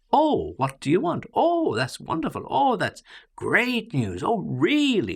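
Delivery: loud, cheerful, very high exclamations. Explaining exclamation marks to learners, demonstrate exclaiming in a loud, happy voice. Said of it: "so we exclaim in a loud, happy voice".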